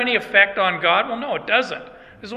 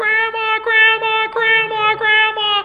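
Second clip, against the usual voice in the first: put-on very high shrieking little-girl voice. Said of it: "and they're shrieking".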